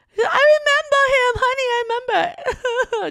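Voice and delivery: very high, put-on weepy fake crying voice. Retelling his mother's reply when he questioned her, imitating her fake crying.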